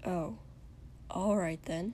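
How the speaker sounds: very soft mutter under the breath. A man answers a servant's offer, muttered. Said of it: "Shoto muttered".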